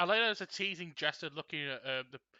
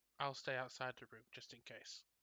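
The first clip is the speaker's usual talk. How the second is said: low, very quiet, hushed, barely audible voice; 2 semitones lower, 11 dB quieter than usual. A character speaks to another while passing her: low voice. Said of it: "says to Dacer in a low voice".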